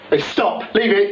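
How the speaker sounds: very high, shrill shouting. Stopping someone from meddling with something you're working on: shouting. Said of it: "don't shout at me".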